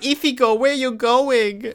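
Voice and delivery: put-on very high, tiny baby voice with a lisp. Describing a show's character to friends, quoting her call to Ichigo in a Nell voice with a lisp. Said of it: "Speaks like with a lisp".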